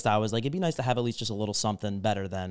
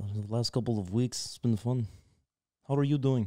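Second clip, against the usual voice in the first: put-on Russian-sounding accent; 5 dB quieter than usual. Answering a friend's questions after his greeting, in a Russian-sounding accent. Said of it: "Have you spent some time in Russia?".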